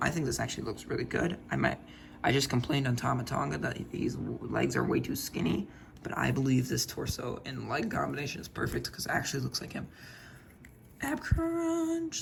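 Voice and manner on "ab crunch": squeaky, very high voice crack on crunch. Speaker choosing a character's torso options, voice cracking. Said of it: "that was an awful voice crack".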